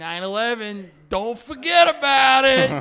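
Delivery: put-on New York accent, very loud, drawn out. Joking about how to remember nine eleven: new york accent. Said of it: "the New York accent".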